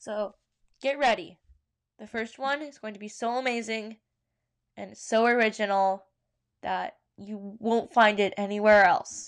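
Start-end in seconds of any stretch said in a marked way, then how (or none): 2.0-9.3 ironic, sarcastic, overhyped overselling build-up. The speaker introduces the first story from their doc, sarcastic. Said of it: "that is sarcasm".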